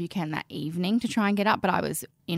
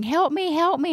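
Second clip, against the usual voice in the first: high, loud, frantic, panicked yelling. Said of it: "he's screaming".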